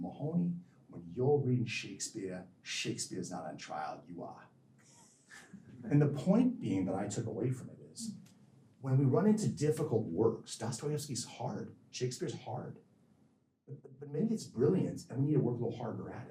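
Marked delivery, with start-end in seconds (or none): 0.0-4.5 put-on furious, scolding-toned speech in a Boston accent. Quoting what a man said to Mahoney: imitating a Boston accent. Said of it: "with his Boston accent".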